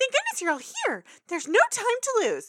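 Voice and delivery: very high, shrill, loud, fast, swooping panic. Acting out a pony greeting friends at the door: imitating frantic Pinkie Pie. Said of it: "she's a little frantic".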